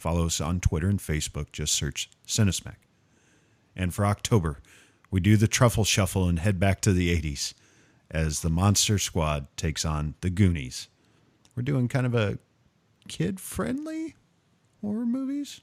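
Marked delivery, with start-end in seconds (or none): 11.6-15.6 very high put-on voice, swinging and swooping. A host announces the next episode's theme in a high-pitched voice. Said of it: "if I say it in a high enough voice".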